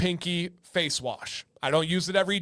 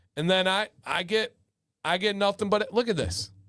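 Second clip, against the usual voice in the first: plain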